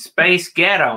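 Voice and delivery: put-on fake American accent. Pushing the other speaker to say the phrase, the speaker tries it in an American accent. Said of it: "In American".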